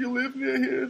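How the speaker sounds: put-on very high, girlish young girl voice. Telling podcast listeners about a girl who questioned them, imitating a young Armenian girl. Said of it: "She talks like this".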